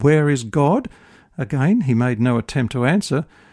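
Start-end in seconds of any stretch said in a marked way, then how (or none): 0.0-0.9 mock stern, firm, pressing tone. Telling a story, the minister repeats his question to a silent boy, mock-stern. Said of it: "repeated the question in a sterner tone".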